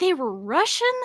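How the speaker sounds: put-on Texan accent at full blast. Laughing and repeating own earlier question: imitating own Texas accent. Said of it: "with the Texas accent".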